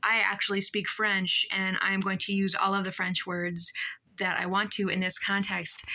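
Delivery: ordinary talk, nothing marked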